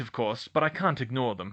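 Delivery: plain reading voice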